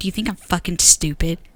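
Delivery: put-on dead-serious tone, pitched low. Recounting to someone what they once asked, acting it out dead serious. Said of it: "Just serious".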